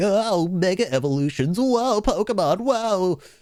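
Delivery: drawn-out, high, slow mocking baby voice. Imitating a guy describing a game's plot, in a mocking baby voice. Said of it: "using a baby voice, being like".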